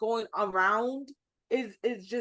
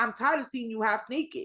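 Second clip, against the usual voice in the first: ordinary talk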